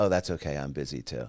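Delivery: put-on, very dry delivery. Retelling a reply to a lunch rejection: imitating a very dry delivery. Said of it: "I said it very dry".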